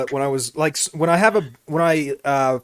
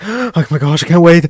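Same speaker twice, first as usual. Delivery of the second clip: very loud gasping, breathless excitement; 3 semitones higher, 9 dB louder than usual. Teasing another speaker about their breathing: imitating excited gasping breaths. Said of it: "you're breathing like".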